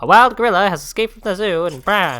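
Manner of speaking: put-on very loud, booming, high-pitched old-time radio announcer voice. Imitating the old radio voices nobody has anymore: old-time radio announcer voice. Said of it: "old radio voices... I can't do it well".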